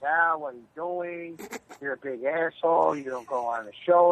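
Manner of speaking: plain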